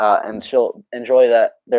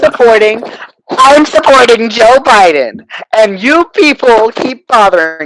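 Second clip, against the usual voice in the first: mock fed-up livid rant, very high-pitched and loud; 10 semitones higher, 7 dB louder than usual. Retelling what a woman contacted by a campaign said, imitating her livid rant. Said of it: "she gets livid".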